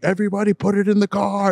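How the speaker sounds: mock, high-pitched screaming. Retelling how a guy ran to the van, imitating him screaming. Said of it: "starts screaming".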